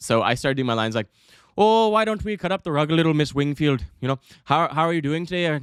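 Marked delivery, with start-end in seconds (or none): 1.6-5.6 put-on Irish accent, higher. Retelling playing his Irish character in a scene: Irish accent. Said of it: "my character's Irish, so around this point, I'm gonna commit".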